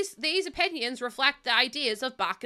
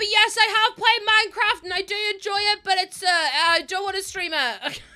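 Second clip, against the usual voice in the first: high-pitched, loud, full-on shouting; 7 semitones higher, 5 dB louder than usual. Matching the other person's shouting energy while answering them: shouting. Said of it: "I don't know why we're shouting".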